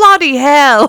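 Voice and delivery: put-on British accent. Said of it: "talk with a Briti-, British accent".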